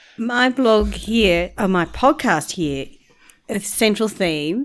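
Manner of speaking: fighting back laughter mid-sentence. Introducing the podcast's central theme while others tease, holding back a laugh. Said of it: "I'm trying not to laugh now".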